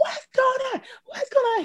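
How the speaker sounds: mock very high, frantic, panicked screaming. Retelling the phone call when someone finally called back, reenacting screaming on the phone. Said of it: "screaming on the phone".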